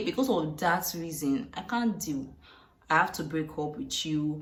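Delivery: ordinary talk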